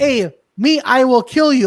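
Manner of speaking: loud, slow, badly dubbed English delivery. Retelling a line from an italian film dubbed into english: imitating a bad english dub. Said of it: "they dubbed it in bad English".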